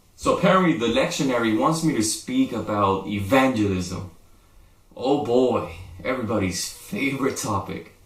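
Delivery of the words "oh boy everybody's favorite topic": feigned enthusiasm meant sarcastically, said as an aside. Introducing the assigned topic of evangelism: sarcastic. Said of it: "I'm being sarcastic".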